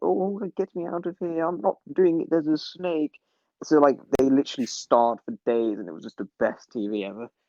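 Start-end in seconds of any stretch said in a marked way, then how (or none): 0.0-3.1 put-on stuck-up elderly snob voice, flustered, panicky. Retelling what a woman on a tv show said from a box, imitating a stuck-up old person. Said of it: "the most stuck-up old person you could imagine".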